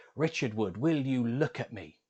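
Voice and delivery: acted, loud, stern scolding tone. Recalling his mum telling him off: retelling a loud, stern scold. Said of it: "in quite a loud voice, a stern voice at least".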